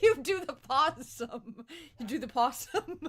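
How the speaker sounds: speaking through laughter. Joking about opossums playing dead to survive, laughing while talking. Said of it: "Sorry for laughing about that".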